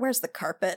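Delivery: low, quiet muttering under the breath. Narrating a scene as a character turns to the footman and mutters. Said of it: "you can kind of hear him mutter".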